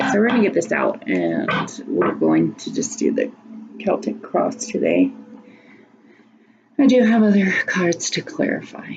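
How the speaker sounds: sounding exhausted. Speaker sets up a Celtic cross card reading for viewers, sounding exhausted. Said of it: "So sorry if I sound exhausted".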